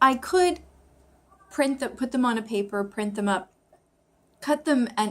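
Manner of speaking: talking with audible hiccups. Explaining a plan for study cards, hiccuping while talking. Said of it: "I have the hiccups right now".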